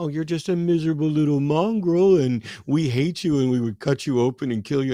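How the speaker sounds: play-acted sugary, sweet, doting tone. Explaining that dogs react to tone, the speaker imitates a man sweet-talking a dog. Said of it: "then talks sweetly to the dog".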